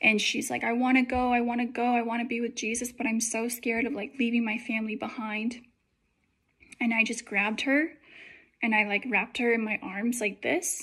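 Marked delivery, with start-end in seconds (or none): 0.6-5.6 mock panicked, tearful crying. Retelling what a panicking woman on the sidewalk said, imitating someone crying. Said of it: "crying, like just panicking".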